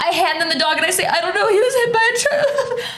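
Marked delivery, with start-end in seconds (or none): 1.0-2.9 high, sobbing, crying through the words. Retelling handing an injured dog to a vet: retelling own sobbing. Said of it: "I'm sobbing".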